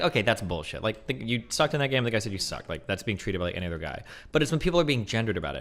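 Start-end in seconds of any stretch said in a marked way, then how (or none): none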